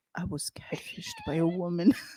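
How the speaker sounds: mock grave whisper, hushed and utterly serious. Teasing a co-host by mimicking her serious tone. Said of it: "Because you said it so serious".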